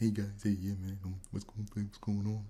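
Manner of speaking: very quiet, gentle, soft-spoken voice. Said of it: "he was really soft spoken".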